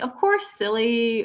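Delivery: mock snarky, teasing, sarcastic delivery. Acting out a lower-vibration being's answer: imitating a sarcastic reply. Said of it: "be a bit more sarcastic".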